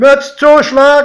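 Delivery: very high, very loud call, like a conductor's cry. A train conductor announces the stop: calling out. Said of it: "rief der Schaffner".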